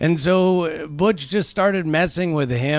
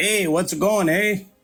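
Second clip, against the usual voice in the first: put-on, clichéd Newfoundland accent; 2 semitones higher than usual. Speaker mimics the accent people supposedly use on newfoundland: imitating a newfoundland accent. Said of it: "that famous accent of".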